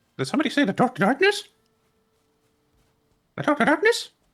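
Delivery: pitch goes way up high and bounces around. Joking about a game, doing a Mickey voice. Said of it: "talk like Mickey".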